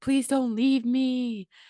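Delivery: put-on little girl voice, high, bawling, begging. A mother retelling her little girl begging her not to leave, imitating bawling. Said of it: "little girl comes in bawling".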